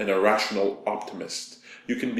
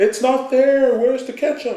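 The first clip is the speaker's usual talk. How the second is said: very high-pitched, loud hollering; 8 dB louder than usual. Retelling yelling back to his girlfriend in her room, retelling his own yell. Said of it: "I yell back".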